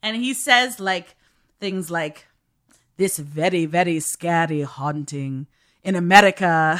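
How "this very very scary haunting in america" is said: creepy, lower, put-on posh upper-crust British narrator accent. Describing a ghost hunter show's narrator, the speaker quotes him in creepy upper-crust British accent. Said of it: "the most upper crusty British person ever".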